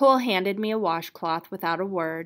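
ordinary delivery

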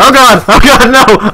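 very high panicked, scared yelp. Getting hit by another player in a game: scared panicked cry. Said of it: "I'm scared!".

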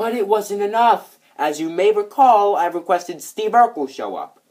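overblown, very loud, high angry yell. Performer rehearsing a scripted line, delivering it too angry. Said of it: "And this sounds way too angry".

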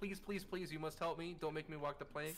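mock begging, pleading tone. Retelling what a captive in the game says: imitating a begging prisoner. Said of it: "He's begging".

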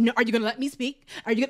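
put-on passive aggressive voice. Retelling an argument between Tim and Alex, imitating Tim, passive aggressive. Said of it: "it was so passive aggressive".

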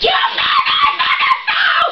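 high-pitched shriek. Recounting how she screamed at the speaker over her phone, retelling a scream. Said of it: "Screaming at me at the top of her lungs".

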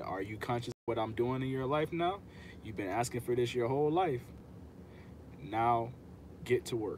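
plain

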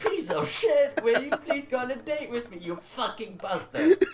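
put-on nervous yelling. Mocking a friend who yells when nervous while asking girls out: acting out nervous yelling. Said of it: "you start yelling at them?".

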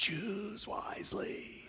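gravelly, breathy, rasping whisper. Retelling a scene where a man must choose a cup, gravelly voice. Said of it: "with this gravelly voice and he says".

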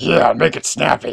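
sharp, tense, curt, snappy tone. Demanding instructions from the ghost: sharp, tense tone. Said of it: "such tension, such sharpness in your voice".

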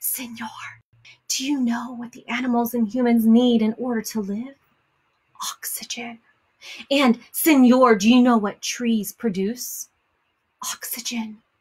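theatrical stage whisper, still voiced. Reading a story aloud, voicing the tree porcupines speaking to the man, whispering. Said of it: "they're whispering. I'm sorry. Let's start this over".

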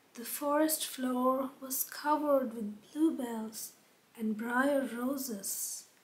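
ordinary delivery, nothing marked

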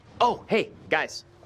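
overeager, far too loud, high-pitched voice. Greeting the others on arrival, who then ask why so loud: loud. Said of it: "why are you so loud?".

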